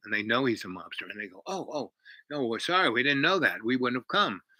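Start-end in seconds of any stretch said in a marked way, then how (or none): none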